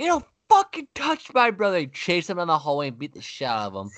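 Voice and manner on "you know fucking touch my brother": very high screaming at the top of his lungs. Retelling how his older brother saw him punched: retelling a full-lung shout. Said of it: "He fucking shouted at the top of his lungs".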